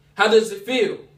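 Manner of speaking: ordinary talk, nothing marked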